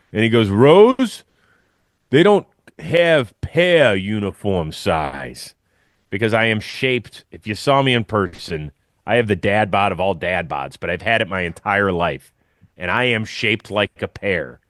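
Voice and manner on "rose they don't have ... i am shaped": put-on New York accent, much slower. Retelling what Mister J said when asked about pants size, Mister J's thick New York accent. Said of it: "had the thickest New York accent ever".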